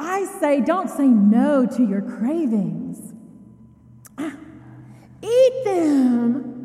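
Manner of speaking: perky, high-pitched little sales voice. A speaker mocks a woman selling almonds, imitating her perky little voice. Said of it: "in her perky little voice".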